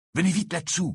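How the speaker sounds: hushed whisper. Pulling a cloak from his bag, a boy calls his friends over, whispered. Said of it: "chuchota Harry".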